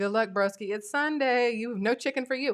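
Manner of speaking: plain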